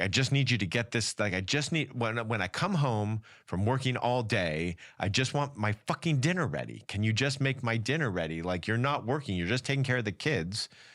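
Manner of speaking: harsh demanding tone. Explaining how wants get voiced, the speaker acts out a demand at home; mock-harsh demand. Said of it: "we say them with so much harshness".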